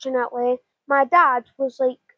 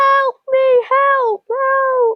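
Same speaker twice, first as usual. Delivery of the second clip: acted-out agonized, very high cries like a baby; 12 semitones higher, 3 dB louder than usual. Recalling the moment of getting up, imitating screaming for help. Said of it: "I was like screaming".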